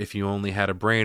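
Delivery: ordinary delivery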